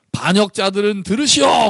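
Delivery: hot-tempered blurted anger.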